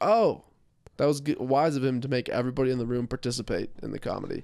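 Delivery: ordinary talk, nothing marked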